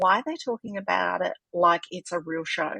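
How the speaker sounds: ordinary delivery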